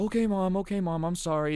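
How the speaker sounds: tough-guy front caving into a high, deflated tone. Speaker retells a gamer answering his mom, imitating a tough-guy act dropping. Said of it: "The tough guy act drops pretty quickly".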